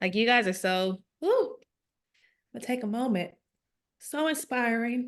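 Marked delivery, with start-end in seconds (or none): 1.2-5.1 choked up, overwhelmed, close to tears. Thanking speakers after hearing their stories, almost in tears. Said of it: "I'm almost in tears over here".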